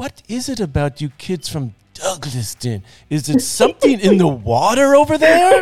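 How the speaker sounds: sing-song put-on Greek accent. Retelling what a professor asked the kids: imitating professor Grammatico's accent. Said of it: "but he had an accent".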